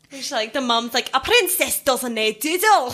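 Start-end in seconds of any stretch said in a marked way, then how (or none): 1.2-3.0 put-on speaking with Scottish accent. Guest tries the one Scottish line she knows, from the movie: Scottish accent from Brave. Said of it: "i can kind of say in a scottish accent".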